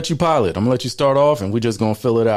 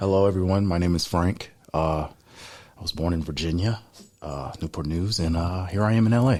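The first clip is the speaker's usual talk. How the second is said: put-on extra correct, careful, proper-sounding voice; 4 semitones lower, 6 dB quieter than usual.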